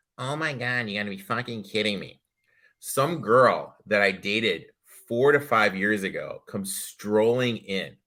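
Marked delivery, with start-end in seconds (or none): 0.2-2.2 extremely screechy, shrill outburst. Act out an ex you ran into at a new dentist, imitating the screechiest voice. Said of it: "in the screechiest voice".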